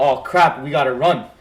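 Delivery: normal talking voice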